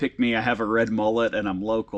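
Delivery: normal talking voice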